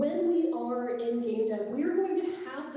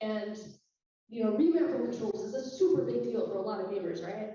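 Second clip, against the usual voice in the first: ordinary talk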